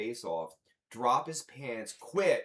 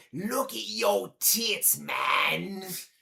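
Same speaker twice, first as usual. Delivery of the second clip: put-on very slow, drawn-out drunk British voice; 9 semitones higher, 4 dB louder than usual. Retelling what a drunk British drummer said to another drummer: imitating a drunk British drummer. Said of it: "drunk British drummer".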